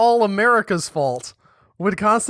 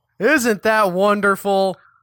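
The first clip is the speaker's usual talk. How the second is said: sarcastic, ironic, tongue-in-cheek tone; 3 dB louder than usual. Joking about a country that has banned sarcasm: sarcastic. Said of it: "we are doing sarcasm about the story where they've banned sarcasm".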